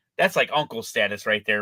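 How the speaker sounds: ordinary delivery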